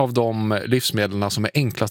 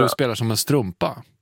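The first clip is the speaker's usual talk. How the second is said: ordinary talk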